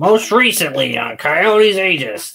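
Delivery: goblin-like voice.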